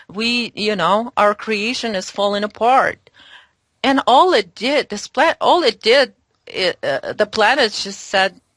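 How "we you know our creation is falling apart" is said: normal talking voice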